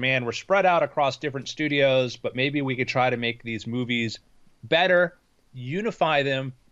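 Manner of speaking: usual speaking voice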